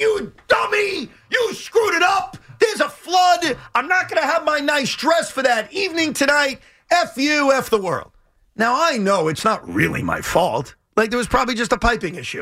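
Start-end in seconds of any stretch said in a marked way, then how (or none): 0.0-8.1 furious, very high-pitched angry yelling rant. A husband retells how his wife yelled at him: imitating her angry yelling. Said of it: "she starts yelling at me like".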